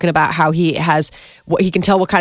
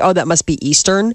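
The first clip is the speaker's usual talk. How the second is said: normal talking voice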